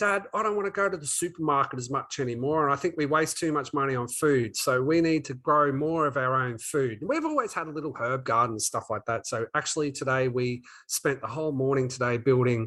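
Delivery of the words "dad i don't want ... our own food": normal talking voice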